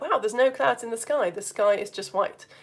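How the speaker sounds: plain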